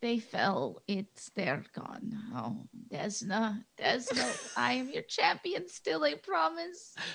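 soft, slow, grief-stricken murmur. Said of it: "she's just like".

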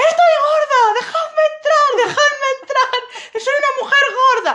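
shrill, full-volume, high-pitched shout. Recounting to a friend how she forced her way in, retelling a shout. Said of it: "Y empecé a gritar".

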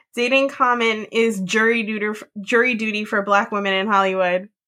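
ordinary talk, nothing marked

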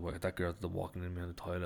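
ordinary delivery

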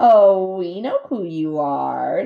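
slow voice dripping with sarcasm. Narrator reads a young bear greeting the robot on the cliff top; dripping with sarcasm. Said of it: "Her voice dripped with sarcasm".

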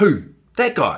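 half-spoken, half-shouted delivery. Retelling pointing out a fleeing robber, reenacting a half-spoken, half-shouted question. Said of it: "half speak, half shout".

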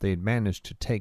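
plain reading voice

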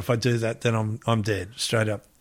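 ordinary delivery

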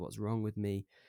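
normal talking voice

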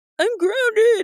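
high falsetto voice. Reading a story aloud, a boy in a headlock protests: falsetto voice. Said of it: "he cried in a falsetto voice".

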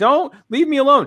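very high, high-pitched shrieking scream. Retelling a viral park video, imitating a woman screaming. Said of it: "she's screaming at him".

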